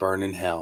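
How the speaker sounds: playful, soft, hushed pretend stage half-whisper. Acting out a line to say at someone's casket: pretend half-whisper. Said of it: "I'm gonna whisper".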